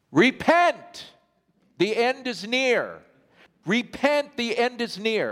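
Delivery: put-on booming, really loud, high-pitched cry. Retelling a woman with a Bible outside a bank, in a really loud voice. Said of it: "Like in a really loud voice".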